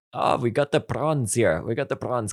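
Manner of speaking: put-on line spoken in a South African accent. Speaker quoting a favorite line from a character; south african accent. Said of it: "it's the South African accent".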